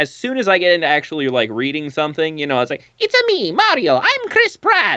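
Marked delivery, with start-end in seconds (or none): 3.0-5.0 bad put-on voice, very high, swooping, slow, wobbly squeak. Showing how reading turns out: bad Mario voice. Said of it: "it's just not actually very good".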